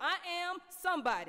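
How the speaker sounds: full-volume, high shout at top of lungs. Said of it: "loud as you can possibly get it".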